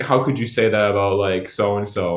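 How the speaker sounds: ordinary delivery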